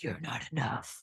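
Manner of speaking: very quiet, hushed, whispery little gremlin voice. A speaker shows how the cute little inner voice turns into the gremlin voice. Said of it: "that gremlin voice can be like".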